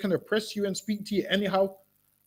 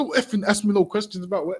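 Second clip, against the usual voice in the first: ordinary delivery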